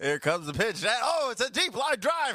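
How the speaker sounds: very high-pitched baseball announcer voice. Describing someone's excitement as it shoots across the room, in a baseball announcer voice. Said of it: "Like some baseball game announcer".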